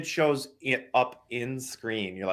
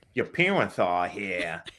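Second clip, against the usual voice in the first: put-on thick heavy Brooklyn accent. Quoting a kid who shows up at the end, in a thick Brooklyn accent. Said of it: "this kid has the thickest Brooklyn accent".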